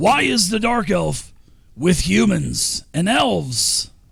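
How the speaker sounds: high, slow, deliberate goblin creature voice. Voicing a goblin who orders intruders to drop weapons: goblin voice. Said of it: "he asks".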